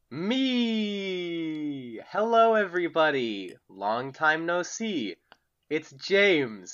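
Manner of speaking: very slow, drawn-out speech. A podcast co-host greets listeners at the start of the show: speaking very slowly. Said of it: "I don't normally talk this slowly".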